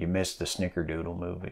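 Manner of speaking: secretive, confidential, very soft hushed half-whisper. Retelling what someone leaned over and told a friend: imitating a confidential half-whisper. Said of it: "in this confidential whisper".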